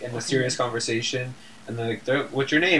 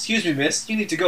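mock extremely polite, courteous, well-mannered tone; 5 semitones higher than usual. Retelling how the new guy asked someone to leave: imitating someone speaking politely. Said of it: "like, so politely".

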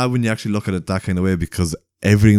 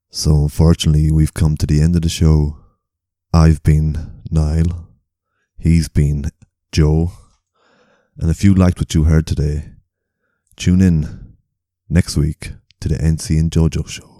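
mock seductive voice, lower pitch; 3 semitones lower than usual. Signing off the show after being asked: put-on sexy voice. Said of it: "Do the sexy voice".

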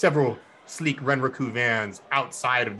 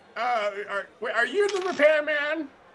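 put-on granny voice, much higher pitch. Answering the door while pretending to be a granny: granny impression. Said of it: "do my best Granny impression with my voice changing".

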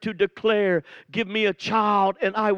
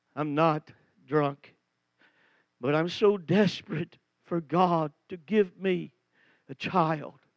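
put-on voice, low, tearful and breaking; 4 semitones lower, 4 dB quieter than usual. Retelling Hannah's answer in the house of God, acting out a tearful, broken voice. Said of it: "through tears, broken voice".

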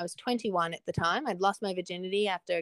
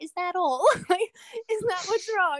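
giggling through the words, very high pitch; 12 semitones higher, 5 dB louder than usual. Retelling her mum's relieved reply: imitating mum giggling while talking. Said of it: "she had a little giggle and she was like".

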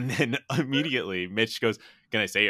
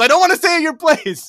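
full-throated, high, very loud yell; 10 dB louder than usual. Retelling a favourite scene, quoting a character's line, retelling a yell. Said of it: "And Mitch just yells".

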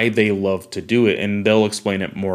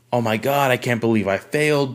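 put-on screaming at top of lungs, higher; 2 semitones higher than usual. Describing kids at a school while a boy phones his dad: retelling kids screaming. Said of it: "screaming at the top of their lungs".

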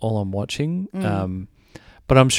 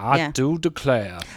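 put-on deliberately poor Southern accent; 3 semitones higher, 3 dB quieter than usual. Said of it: "one of the worst like Georgian Louisiana accents".

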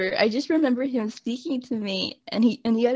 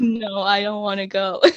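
put-on, acted-out crying. Recalling a moment when the speaker's mom asked if they were ready, acting out their past self: retelling crying as a kid. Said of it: "And I started crying".

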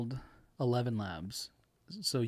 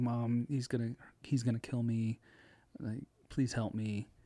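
put-on pleading tone. Retelling a scam call that played a daughter's faked voice: imitating a daughter's pleading voice. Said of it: "her daughter's voice".

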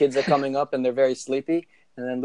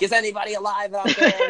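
mock, high-pitched rock-star stage yell; 7 semitones higher than usual. Acting out a friend in costume yelling to a crowd: imitating someone yelling. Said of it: "He'd be yelling".

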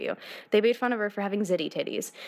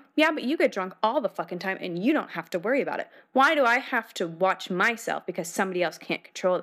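imitated aggressive, combative tone. Retelling an argument with the dad: imitating own aggressive retort. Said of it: "I got really aggressive".

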